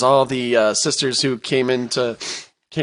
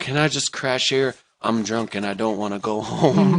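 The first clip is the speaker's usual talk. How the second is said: ordinary talk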